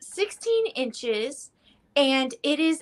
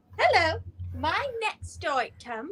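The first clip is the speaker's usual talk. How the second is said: mock British accent, higher pitch; 4 semitones higher than usual. Introducing the next item for bidding: put-on British accent. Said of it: "Are we going British for the rest of the evening?".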